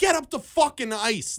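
mock yelling, high-pitched. Retelling yelling at the tv during the game: imitating yelling at the tv. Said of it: "I was yelling at the T V".

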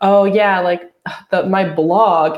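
slow, dismissive, disparaging self-deprecating brush-off tone. Retelling own old joke about a literature degree: imitating own disparaging tone. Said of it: "say it in that tone of voice".

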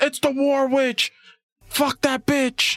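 put-on scream. Retelling how the one with the gun clicks it, acting out a scream. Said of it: "clicks it and screams".

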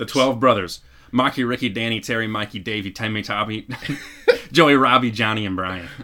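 Boston accent, belted very loud. Taking a turn in a boston accent challenge, boston accent. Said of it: "you want to go first or second on your Boston accent?".

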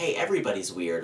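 normal talking voice

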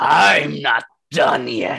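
loud, gruff, rough growled-out voice. Narrating combat, the storyteller voices a foe hit by two blasts: growling. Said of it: "he just growls out".

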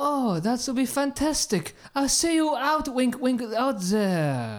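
put-on French accent. Wrapping up a silly date plan with the other person, in a french accent. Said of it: "I love your French accent".

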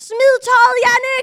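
piercing, shrill, high-pitched shriek at full volume. Speaker retells a moment when everything went quiet, retelling a scream. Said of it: "Og så skriger jeg".

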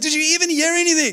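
full-on, high-pitched, accusing yell. Retelling how a woman in the car yelled at him: retelling her yell. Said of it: "She like yells at me".

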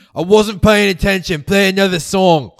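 shrill, very loud, high-pitched yell. Retelling a scene in a bar, voicing Ringo shouting from across the room. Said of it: "you hear Ringo shout from across the bar".

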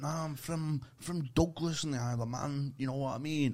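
cartoonish put-on Manchester accent. Retelling a man's reply about where he is from: imitating a cartoon Mancunian accent. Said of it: "he was being cartoon mank".

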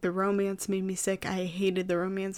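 ordinary talk

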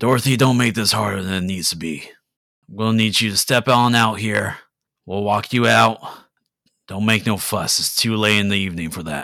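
rough, gruff, loud, quick voice. Dorothy hears a voice addressing her, speaking in a gruff voice. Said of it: "you hear a gruff voice".

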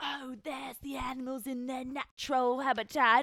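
put-on Aussie accent. Hiding outside a frat house window, narrating passersby in a put-on australian accent. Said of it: "speaking in Australian accents".

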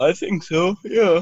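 high yawning voice, words stretched by a yawn. Agreeing about a film effect, the speaker answers: yawning while speaking. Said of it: "if you're yawning while you say it".

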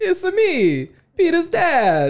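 put-on Italian accent. Joking with others about Italian accents, in a Mario-style Italian accent. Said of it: "I wish I had a good Italian accent to join".

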